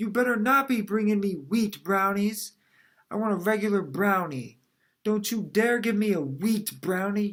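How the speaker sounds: put-on cross old lady's scolding voice. Acting out the speaker's grandma getting angry with them: imitating grandma's anger. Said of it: "She got really angry with me".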